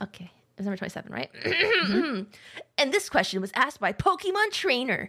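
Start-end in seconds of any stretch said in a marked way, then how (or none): 2.8-5.1 swooping, sing-song cartoon hero voice with swinging pitch. Reading out the next question aloud, in an Ash Ketchum voice. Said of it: "I went into my Ash Ketchum voice".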